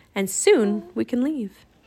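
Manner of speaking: ordinary delivery, nothing marked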